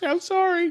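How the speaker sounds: mock very high, timid, cowering, apologetic voice. Retelling how a customer cowered as his wife yelled: imitating a cowering apology. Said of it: "he cowers and just starts".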